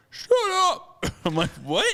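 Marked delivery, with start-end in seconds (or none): 0.1-1.0 mock very high, loud, sobbing yell. Retelling a man ripping planks off the fence, imitating someone cry-yelling. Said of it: "he's just like cry yelling".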